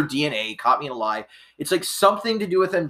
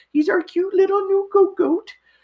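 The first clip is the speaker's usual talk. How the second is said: put-on very high-pitched baby talk; 4 dB louder than usual. Introducing your young goat, speak in the high-pitched way you talk to him. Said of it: "if you wonder if I talk to him like that".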